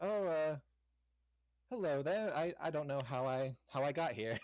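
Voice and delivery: feigned innocence. In character, the speaker greets the others who found them, feigned innocence. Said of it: "I look at them and go like".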